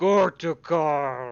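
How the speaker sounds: echoing thunderous booming call, very loud. Narrating a scene where a voice summons a creature before guards, thunderous echoing voice. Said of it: "this thunderous voice echoes against all of the walls".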